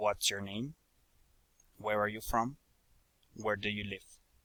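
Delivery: low, soft, falling intonation on wh-questions. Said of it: "Falling intonation".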